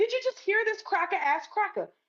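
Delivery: mock heated yelling, high-pitched. Retelling a confrontation outside a bar, retelling own yell. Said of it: "that's when I started yelling".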